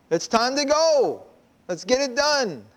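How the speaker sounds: rousing yell.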